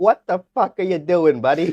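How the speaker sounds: put-on Boston accent. Imitating the other speaker's accent that sometimes comes out: imitating a boston accent. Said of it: "Boston accent that sometimes comes out".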